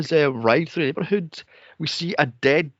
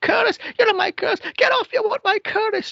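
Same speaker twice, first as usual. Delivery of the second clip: mock shrill, very high screeching scream. Retelling a movie character who is screaming at people helping them: imitating her screaming. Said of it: "she's still screaming".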